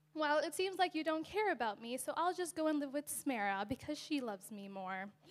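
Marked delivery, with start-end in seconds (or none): none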